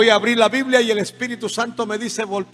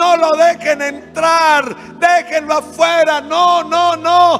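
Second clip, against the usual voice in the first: very slow, loud, pitched-up demonic screaming; 7 semitones higher, 6 dB louder than usual. Recounting approaching a door as the demons began to shout, imitating demons screaming. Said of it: "los demonios a gritar".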